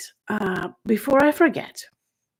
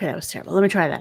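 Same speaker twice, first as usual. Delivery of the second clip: usual speaking voice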